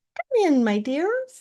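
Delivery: high, disguised, put-on grandmother voice. Narrator reading the wolf answering a knock at the door, in a high voice. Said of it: "said the wolf in a high voice".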